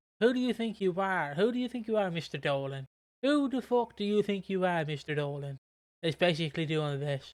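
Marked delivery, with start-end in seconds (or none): 0.2-5.6 yelling woman's voice, attempted Dublin accent. Retelling how a woman confronted a man, in an attempted dublin accent. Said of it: "I'm trying to do Dublin".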